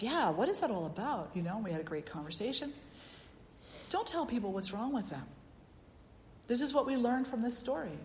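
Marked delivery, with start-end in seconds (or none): none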